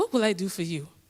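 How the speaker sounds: put-on West African accent. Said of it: "my mom has a wonderful accent".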